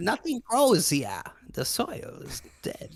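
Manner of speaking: crazed, manic, breathy whisper. Quoting the Inquisitor from the film Silence: imitating the Inquisitor's crazy voice. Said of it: "he has this, like, crazy voice".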